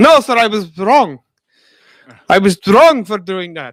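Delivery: put-on Eastern European accent. Redoing the joking reply, this time in a Borat voice. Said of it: "Borat voice".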